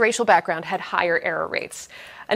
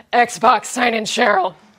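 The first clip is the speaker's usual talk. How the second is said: put-on slow, eighty-year-old smoker's voice; 3 semitones higher, 4 dB louder than usual. Showing how the speaker gives the Xbox a command, eighty-year-old smoker voice. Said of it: "I need to use my eighty-year-old smoker voice".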